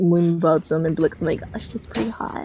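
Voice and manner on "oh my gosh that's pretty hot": mock seductive, horny voice, quieter. Showing how trolls get answered in chat: put-on horny voice. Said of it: "I'll just use horny voice".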